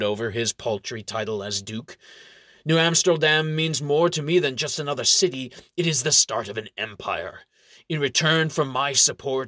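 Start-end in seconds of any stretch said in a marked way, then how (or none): none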